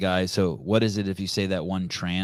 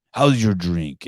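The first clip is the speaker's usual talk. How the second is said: put-on heavy, strong Italian accent; 4 dB louder than usual. Retelling an old man who kept touching his back, strong Italian accent. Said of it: "his strong Italian accent".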